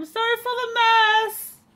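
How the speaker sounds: very high, loud, drawn-out yell. Apologizing in character for the mess as the door opens: shouting back. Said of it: "shouting back".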